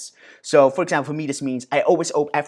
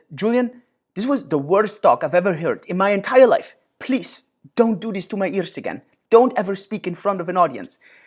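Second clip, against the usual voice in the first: put-on thick, heavy, strong French accent; 4 semitones higher than usual. Retelling what a friend from France said after his talk, strong French accent. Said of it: "he had this really French accent".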